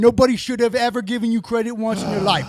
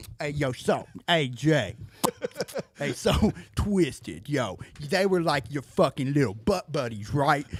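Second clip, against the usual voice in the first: very low, slow, lip-licking drawl; 8 semitones lower, 8 dB quieter than usual. Retelling what Kev asked Jay in an interview: imitating Kev. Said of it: "We're back to the Kev impersonations".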